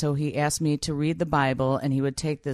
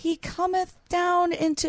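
put-on tiny, very high little child's voice. Retelling being an eight-year-old kid on old tapes, little high child voice. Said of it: "this little high voice going".

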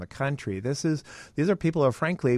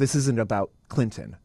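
put-on disgusted tone. Recounting what young women said at a speak-out, quoting them with disgust. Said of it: "said with disgust in their voice".

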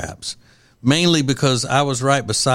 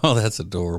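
put-on mocking, sarcastic put-down tone; 4 semitones lower, 4 dB quieter than usual. Responding to something meant to be serious and philosophical: sarcastic 'adorable'. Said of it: "Like in a sarcastic way".

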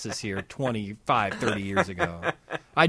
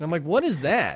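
usual speaking voice

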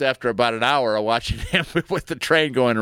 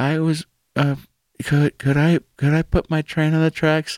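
put-on quiet little boy voice, slower; 4 semitones higher than usual. Retelling how a little boy asked the train guys something, imitating him speaking quietly. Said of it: "he says real quietly".

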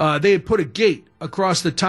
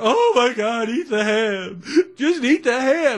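mock high, slow weeping through tears; 7 semitones higher than usual. Retelling a family fight over eating ham, imitating mom crying. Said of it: "Now my mom is crying even harder".

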